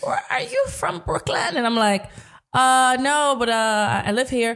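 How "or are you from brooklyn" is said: bad put-on Caribbean accent, very high pitch. Retelling what a lady turned around and asked her, in a bad Caribbean accent. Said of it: "this is my bad Caribbean accent".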